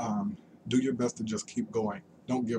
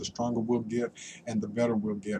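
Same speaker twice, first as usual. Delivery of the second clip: ordinary talk, nothing marked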